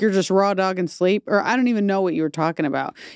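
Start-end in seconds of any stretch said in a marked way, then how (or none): none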